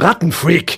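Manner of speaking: high, shrill screamed outburst. [name], after Peter ignores her sobbing, turns on him, screamed.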